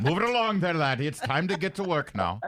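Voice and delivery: put-on Irish cop accent. Redoing an earlier cop impression, stereotype irish cop accent. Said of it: "the stereotype one that I had with the Irish accent".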